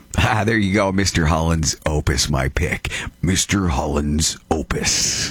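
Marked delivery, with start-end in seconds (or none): 3.2-5.3 trailer announcer voice, much slower. Naming a movie pick on a countdown list, in a movie trailer voice. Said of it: "Trailer voice".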